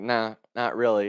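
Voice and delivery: ordinary talk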